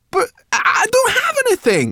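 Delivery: very high-pitched, loud, stumbling stammer. Sorrel answers Gilbert, who demands payment, stammering. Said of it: "stammered Sorrel".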